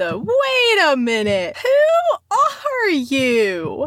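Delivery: very slow, sing-song, swooping, drawn-out "you". Commenting the way she always does, Kazoo Kid voice. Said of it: "it's always in the voice of the kazoo kid".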